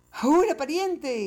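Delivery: high, loud, yelled shout. In the tale, Juan cries out as the feline pokes its head into the bag, shouting. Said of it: "gritó entonces Juan".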